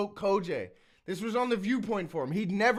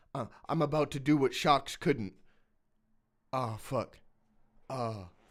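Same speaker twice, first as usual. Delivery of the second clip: hushed, shy, introverted, barely-there murmur; 7 semitones lower than usual. Retelling an opponent's timid battle bar: imitating someone half-whispering. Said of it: "and he's whispering them".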